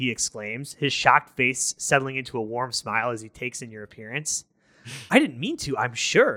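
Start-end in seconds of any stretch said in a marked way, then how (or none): 5.1-6.4 apologetic, sorry-sounding tone. Having startled a man in a library, the visitor answers him apologetically. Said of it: "you say apologetically".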